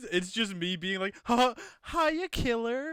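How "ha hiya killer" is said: put-on full California girl way of talking. Showing a favorite character version's greeting: California girl voice. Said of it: "I'm just like a Cali girl".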